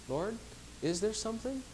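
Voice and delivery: sweet, tender, unafraid, lifted tone. Speaker acts out asking the lord in prayer, acting out a sweet tone. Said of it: "in that sweet tone".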